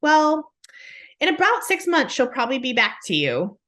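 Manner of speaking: put-on nonchalant tone. Retelling what a caller said about the child returning: imitating a nonchalant remark. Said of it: "she just said it so nonchalantly".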